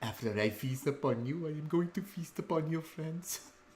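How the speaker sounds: high, excited, giggling creature voice. A narrator voices his character threatening Vernak, with a little excited giggle. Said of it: "again with kind of that little giggle".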